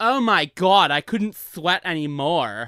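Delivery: drawn-out, weird, put-on, near Long Island accent. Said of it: "bordering a Long Island accent".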